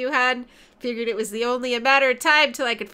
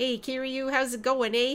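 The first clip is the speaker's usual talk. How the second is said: outrageous, exaggerated put-on Canadian accent; 6 dB quieter than usual. Playing a game and voicing a character greeting Kiryu, outrageous Canadian accent. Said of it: "give him the outrageous Canadian accent".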